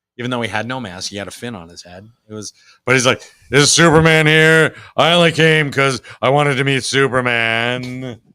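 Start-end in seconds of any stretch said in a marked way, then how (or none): 3.5-8.2 put-on loud, slow, unhurried old-fashioned voice. Retelling a cartoon scene with the Starman character: Ted Knight voice. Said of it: "he's doing a Ted Knight voice".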